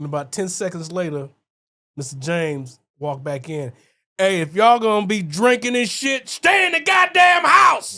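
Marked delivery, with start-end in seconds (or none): 4.2-8.0 booming, loud shout, pitched high and climbing. Retelling a friend's dad walking back in, imitating a yell. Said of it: "But you ain't got to yell like that".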